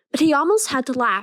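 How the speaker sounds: usual speaking voice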